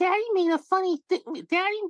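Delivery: put-on very high voice like an oversized kid. Retelling a scene, the speaker voices the 300-pound kid Junior: Junior voice. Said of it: "Junior's like this 300-pound kid going".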